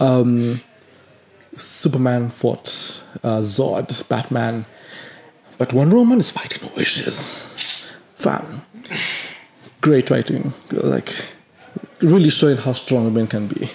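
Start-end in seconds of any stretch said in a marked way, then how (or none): 8.1-13.7 ironic, insincere praising tone, clearly sarcastic. Criticizing a movie's writing to another speaker: sarcastic praise. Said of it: "I say that sarcastically".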